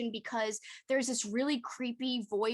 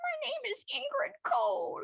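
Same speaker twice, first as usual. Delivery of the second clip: very high, slow, drawn-out mocking voice. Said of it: "I started to be like".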